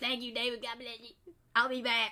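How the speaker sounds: put-on cartoonish kid voice. Retelling what a coworker said, in an Eric Cartman-like voice. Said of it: "Does she sound like Eric Cartman?".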